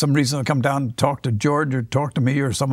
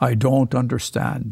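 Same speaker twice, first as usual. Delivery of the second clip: imitated thick Swedish accent; 2 semitones lower than usual. Retelling what a woman said while answering the office telephone, thick Swedish accent. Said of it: "she had a very thick Swedish accent".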